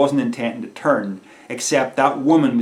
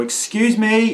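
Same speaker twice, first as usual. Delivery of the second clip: very high, raised play-acted shout; 10 semitones higher, 4 dB louder than usual. Retelling calling again when the men still had not heard: retelling a louder shout. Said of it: "I shout".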